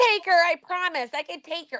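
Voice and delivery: put-on very high, sinister, creepy small-child voice. Act out what she said for your co-hosts, in a little kid voice. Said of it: "Like this little kid voice".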